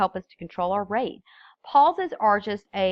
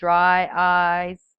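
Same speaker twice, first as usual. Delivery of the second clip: put-on monotone commercial voice, louder; 5 dB louder than usual. Showing what to avoid in a speech by quoting a commercial, do a monotone Ben Stein impression. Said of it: "where he goes".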